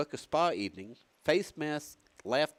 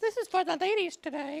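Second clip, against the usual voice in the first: deliberately very high put-on voice. A show host introducing a segment for the ladies, in a high-pitched voice. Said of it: "Should I use a high voice?".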